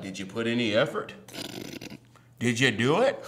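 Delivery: very deep, low male voice.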